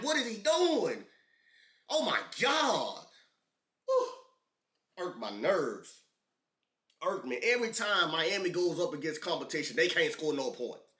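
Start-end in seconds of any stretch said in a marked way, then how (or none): 0.0-4.1 put-on, exasperated, high-pitched screaming in disbelief. Retelling watching the game and yelling at the TV: retelling own screaming. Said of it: "I'm screaming at the T V like".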